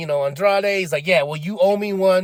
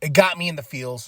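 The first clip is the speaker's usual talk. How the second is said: plain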